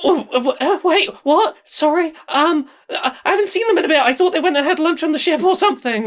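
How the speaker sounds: very high, terrified and close to crying. Game master voicing an Illithid questioned by the players, on the verge of tears, terrified. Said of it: "on the verge of tears, is terrified".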